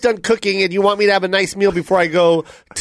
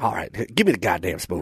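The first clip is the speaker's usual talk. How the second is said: very low, deep, bottomed-out voice; 13 semitones lower, 8 dB quieter than usual. Acting a skit as a football player arguing with his wife: Russell Wilson impression. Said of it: "That is a great Russell Wilson".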